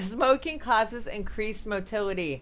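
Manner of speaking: slow speech broken by giggling laughter.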